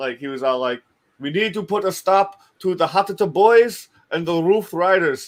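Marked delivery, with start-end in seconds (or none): 1.2-5.3 put-on Ghanaian English accent. Act out the principal from Ghana addressing a school assembly, imitating a Ghanaian accent. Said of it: "So it was like super funny with his accent".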